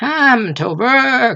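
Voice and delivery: snarling, hoarse and high. Narrator reads Coppelius calling the father to work, Coppelius, hoarse snarling voice. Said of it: "in a hoarse, snarling voice".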